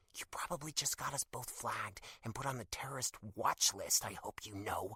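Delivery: whispering angrily. Reading a story aloud, a character answers in a doctor's office: angry whisper. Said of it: "she whispers back angrily".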